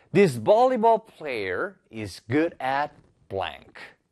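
very slow, clear, careful teacher-like reading aloud. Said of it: "이제 마지막 문장 들어가 볼게요".

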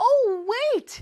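sudden realization, high and loud.

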